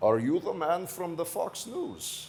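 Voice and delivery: put-on slight, somewhat Slavic accent. Act out a guy looking up at you and asking a question, in kind of a Slavic accent. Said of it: "He's got kind of a Slavic accent".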